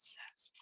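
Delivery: very soft, barely voiced whisper. Telling viewers what a daughter gave: whispering. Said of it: "I'm gonna whisper it".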